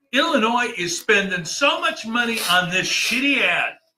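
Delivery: shouting in anger. Complaining about an Illinois ad on the screen: angry yelling. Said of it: "Why are you yelling?".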